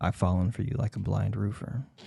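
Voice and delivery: bone-dry, dead straight, quiet flat deadpan delivery. Delivering the joke line as it must be told, absolutely deadpan. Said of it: "only if you say it absolutely deadpan".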